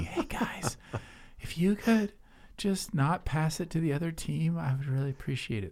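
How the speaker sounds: high, faint whisper. Showing how their voice sounds while coaching players, weak whispering coaching voice. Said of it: "That's how I sound".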